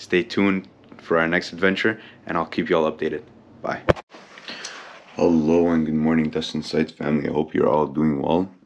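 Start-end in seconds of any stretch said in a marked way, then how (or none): 5.2-8.5 rustic-sounding, fresh-from-sleep just-woke-up voice. Greeting the Destined Sites family just after waking up, rustic-sounding morning voice. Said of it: "I apologize for my rustic sounding voice".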